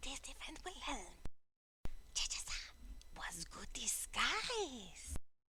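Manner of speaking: quiet creature voice kept under the breath. Voicing Paco right after being shushed by another player: hushed Paco voice. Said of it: "Oh, sorry".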